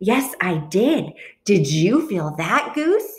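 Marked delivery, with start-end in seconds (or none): none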